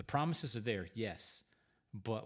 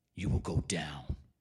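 deep, loud, pushed-out superhero voice; 6 semitones lower, 5 dB louder than usual.

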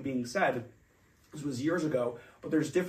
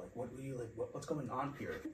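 put-on panicked voice, lower and quieter; 4 semitones lower, 13 dB quieter than usual. Retelling being stopped by an officer after graduating: retelling own freaking out. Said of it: "I'm, like, freaking out".

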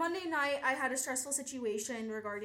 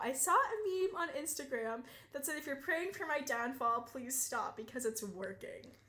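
play-acted speech through sobs, tearful. Retelling what was said after breaking down in an office: imitating someone sobbing. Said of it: "So I'm saying this while sobbing".

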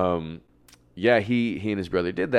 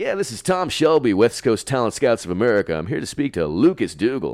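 slick, rapid-fire, swooping, over-the-top L.A. dude voice; 4 semitones higher, 3 dB louder than usual.

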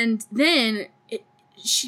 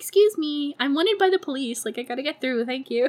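sweetly polite, courteous manner; 3 semitones higher than usual. Retelling a movie scene of cutting through a line: imitating someone being polite. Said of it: "she's so polite".

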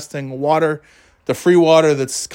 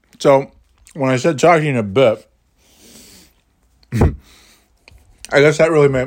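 talking with mouth full, chewing. Podcast host talking to listeners, talking while eating a cookie. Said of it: "sorry, I'm eating a cookie".

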